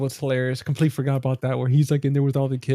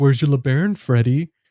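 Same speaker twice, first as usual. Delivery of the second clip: put-on taunting voice; 4 dB louder than usual. Retelling a movie scene where Tom Green taunts his brother: imitating Tom Green taunting. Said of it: "Tom Green is taunting him".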